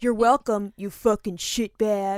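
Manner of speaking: fake cowboy character voice and accent. Retelling a remark said under a mask to someone who ignored them, in a cowboy voice. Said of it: "in a cowboy voice".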